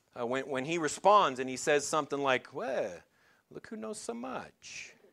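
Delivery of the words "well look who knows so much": put-on hushed, murmured Yiddish accent with swooping lilt. Retelling how Jesus answers a woman talking to him, Jesus with a Yiddish accent. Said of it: "Jesus will pick up a little bit of a Yiddish accent".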